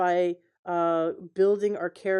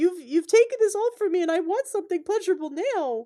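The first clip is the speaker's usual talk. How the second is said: very high spoiled-brat screech; 12 semitones higher than usual. Describing how a man flips into a little brat: imitating a bratty scream. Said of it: "that little brat that screams".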